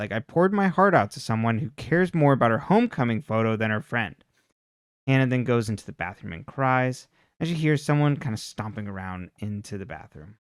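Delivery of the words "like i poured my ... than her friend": plain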